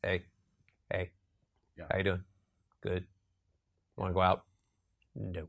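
very low, flat, unmusical droning monotone. Showing how people talk once the music is taken out: flat, unmusical speech. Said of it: "we end up talking like this".

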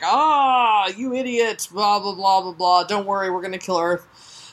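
play-acted jeering villain taunt with drawn-out ah. Retelling a story, the speaker voices Kingdom taunting him: mock taunting as Kingdom. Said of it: "Kingdom is just taunting him like".

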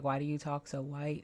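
ordinary delivery

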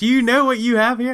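very high, rushed, fast excited shouting. Retelling reacting to two boxes of Type 55 someone brought, retelling own yelling. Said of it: "I'm like yelling at him and like shaking him".

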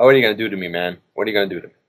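play-acted tearful, crying, pained pleading tone. Retelling pleading with a chiropractor while in pain: retelling own crying plea. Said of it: "I'm crying, basically in pain".

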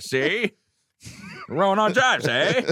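very high, old-fashioned put-on voice. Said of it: "Old timey voice".

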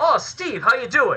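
high, terrible put-on British accent. Act out someone coming up and greeting Steve, in a terrible British accent. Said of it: "That's my terrible British accent".

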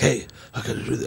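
put-on whisper. Describing a man who whispers all his lines, then imitating him; imitating someone's whisper. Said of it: "He just whispers all his lines".

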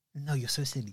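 put-on flirty laughing voice.

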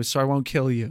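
ordinary talk

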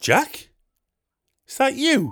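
put-on very high-pitched Geordie accent, calling out. Retelling a man at the table behind calling out his name, geordie accent. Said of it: "in a Geordie accent".

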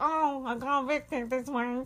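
slow voice, sounds permanently stuffed-up nose. Imitating an evicted housemate who always sounds blocked up: imitating Nedda's blocked-up nose voice. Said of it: "she sounds permanently like she's got a blocked up nose".

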